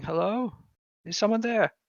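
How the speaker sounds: put-on high, elderly man's voice. Narrating a scene, a voice calls out as the players pass a hallway: old man's voice. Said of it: "you hear an old man's voice going".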